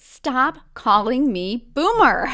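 slow, loud, mock exasperated protesting tone.

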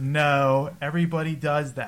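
usual speaking voice

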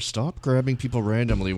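mock heated whisper. Acting out scolding someone for grabbing people, in a heated whisper. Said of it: "I'm whispering this kind of heatedly in your ear".

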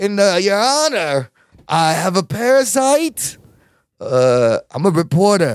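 put-on drunken celebrity voice. Mimicking a man begging a judge for leniency, in a drunk Christopher Walken voice. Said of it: "He sounds like a drunk Christopher Walken".

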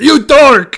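very high, loud yelling. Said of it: "He goes".

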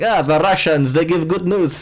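put-on Arabic-accented speech.

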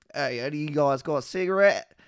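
imitated Australian accent. Retelling what a strung-out guy on the field asked, imitated Australian accent. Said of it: "Or he's Australian".

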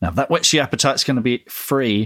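usual speaking voice

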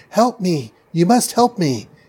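shouting in a borrowed voice. Retelling how a captor calls out in his captive's voice, shouting for help. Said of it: "adopts her voice and basically shouts".

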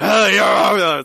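hoarse yelling rock voice. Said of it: "just that hoarse yelling".

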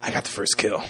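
put-on character voice with sniffing. Picturing a character bragging in a group: sniffing Ellis voice. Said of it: "he's, like, sniffing. He's like".

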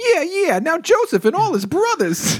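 very high goofy sidekick voice. Reading a Bible story aloud, trying a new voice: random sidekick guy voice. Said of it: "like a random sidekick guy".

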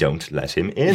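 ordinary talk, nothing marked

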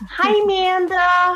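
put-on American accent. Retelling how she greets someone on a phone call, in a completely american accent. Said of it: "in a completely American accent".

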